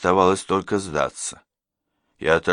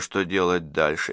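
ordinary delivery

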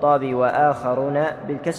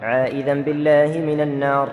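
ordinary talk, nothing marked

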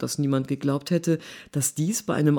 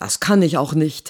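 hissed, louder; 5 dB louder than usual. A man answers a woman who whispered to him, hissed back. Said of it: "zischte er zurück".

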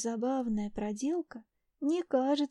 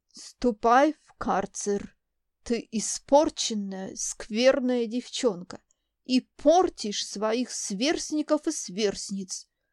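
loud, scornful, contemptuous scolding tone; 5 dB louder than usual. An old woman, calling after the departing girl she sends away: contemptuous. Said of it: "Презрительно бросает мне вслед старуха".

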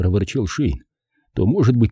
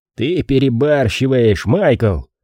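sour tone, much slower; 2 semitones higher than usual. After a detective's angry outburst, another man addresses him: sour remark. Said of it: "кисло заметил Джентри".

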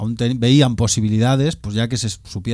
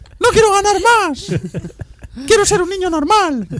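very high, squeaky shout; 4 dB louder than usual. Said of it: "Gritabas ahí en tu soledad".

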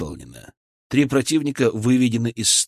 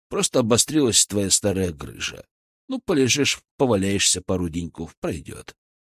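plain reading voice

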